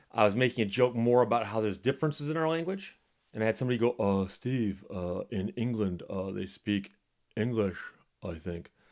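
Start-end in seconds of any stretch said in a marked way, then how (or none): 4.0-8.7 put-on low, dopey, dim-witted dumb-guy voice. Quoting what somebody told him, in a put-on dumb guy voice. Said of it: "sorry to do the dumb guy voice for you".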